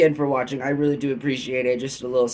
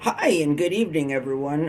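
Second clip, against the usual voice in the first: voice cracking; 3 semitones higher than usual. Vlogger opening the show by greeting viewers, voice cracking. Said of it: "My voice just cracked".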